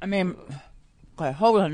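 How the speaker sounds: muffled speech with mouth full of ice pop. Mid-podcast conversation, a co-host talks with a mouth full of popsicle. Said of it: "Now I have too much popsicle in my mouth".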